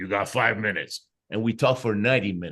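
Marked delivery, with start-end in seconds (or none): 0.0-1.1 play-acted stern, serious, unfriendly, mean voice. Retelling how he got on the phone and spoke, in a serious, mean voice. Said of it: "in a real serious, mean voice, he goes".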